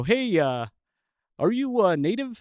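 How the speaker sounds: deliberately bad Canadian accent. Retelling what local Canadian guys asked him, in a bad Canadian accent. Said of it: "this is a bad accent".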